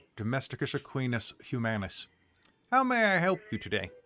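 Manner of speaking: swooping garden-gnome creature character voice. The storyteller voices a gnome creature looking up at a centaur: garden-gnome creature voice. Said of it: "like a garden gnome type of creature".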